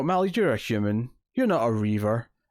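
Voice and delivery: plain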